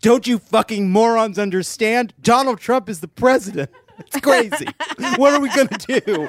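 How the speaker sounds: yelling rant, very high-pitched and shrill. Retelling Tom Steyer yelling at all of them, Tom Steyer yelling impression. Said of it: "just yelling at all of them".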